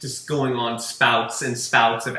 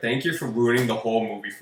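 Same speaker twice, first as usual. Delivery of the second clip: put-on angry sarcastic tone. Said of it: "somewhat sarcastic, but definitely an angry tone".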